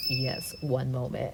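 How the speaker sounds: super creepy, hushed voice. Retelling a man's reply to a request to share an elevator; super creepy voice. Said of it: "in his like super creepy voice".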